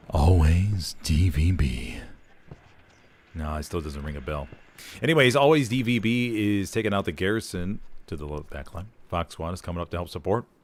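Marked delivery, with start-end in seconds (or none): 0.1-1.9 sensual voice, much lower pitch. Trying a callout again, speaker says it in a sensual manner. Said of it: "in maybe a more sensual manner".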